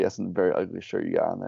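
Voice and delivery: normal talking voice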